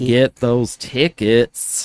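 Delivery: pulpit-style, fervent preacher-like delivery. Plugging the Launchpad's anniversary weekend tickets, in a Letterkenny preacher voice. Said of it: "Who is that voice?".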